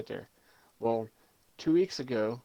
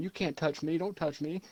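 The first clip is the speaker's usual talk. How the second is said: put-on girl's scream, higher pitch; 5 semitones higher than usual. Retelling what a girl shouted at an old guy: imitating a girl screaming. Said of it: "The girl was just screaming".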